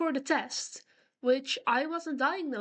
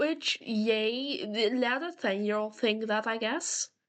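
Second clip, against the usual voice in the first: normal talking voice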